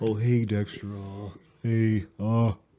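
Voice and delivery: put-on slow, dragging old-man drawl, every word drawn out. Imitating a coworker who sounds like Eeyore: Eeyore voice. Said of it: "he sounds like Eeyore".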